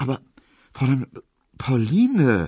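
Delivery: stammering. A narrator reads Emil Kubinke replying to Pauline, stammering. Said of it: "stotterte Emil Kubinke".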